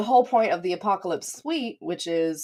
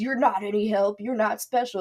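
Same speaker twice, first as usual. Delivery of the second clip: put-on yelling voice, higher pitched; 4 semitones higher than usual. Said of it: "he starts yelling at her".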